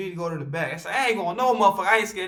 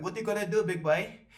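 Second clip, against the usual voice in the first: defiant, challenging tone in a put-on Caribbean accent; 9 dB quieter than usual. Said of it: "I sound like I have a Caribbean".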